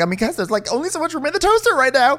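very high, fast, wobbling, shaky, frazzled voice. Recapping a scene where Oriana is losing her mind, imitating Oriana's shaky voice. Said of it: "her voice is getting shaky".

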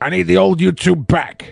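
rough, creaky, raspy, gruff voice. Reading a chat request aloud in a Vince McMahon voice. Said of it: "Vince McMahon voice".

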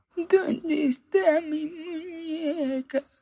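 very high little voice, muñeca drawn out. Speaker imagining a voice greeting a traveler back from the doll island, tiny little voice. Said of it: "una vocecita que dice".

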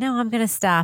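speaking softly. Retelling what an interviewee said to the interviewer: imitating someone speaking softly. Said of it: "he speaks very softly".

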